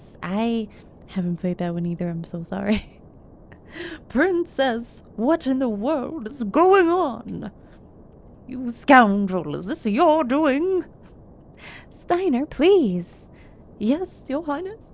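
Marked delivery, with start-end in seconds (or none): 4.1-10.8 strained, effortful, forced guard-captain voice. Streamer voices a game character's lines to the princess, in a forced deeper character voice. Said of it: "[name], / Yeah, it's hard to give him a deeper voice".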